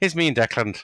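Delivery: put-on Irish accent. Retelling the electrician showing his phone photo, the speaker does an Irish impression. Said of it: "That's my Irish impression".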